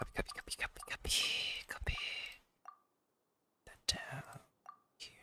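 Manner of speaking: hushed, breathy ASMR-volume whisper. Speaker muttering to themself while copying things, in an ASMR volume voice. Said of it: "Sounds like I'm doing my A S M R volume voice right now".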